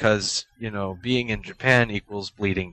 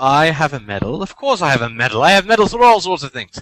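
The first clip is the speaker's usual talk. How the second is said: poorly faked British accent, louder; 5 semitones higher, 8 dB louder than usual. On a podcast, answering the host's question about having a medal; poorly faked British accent. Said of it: "my poorly faked British accent".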